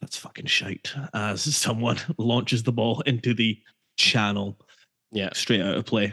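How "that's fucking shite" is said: put-on mumbling, quieter. Recalling what Graham muttered beside him early in the game, mumbling like Graham. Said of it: "Graham was just mumbling".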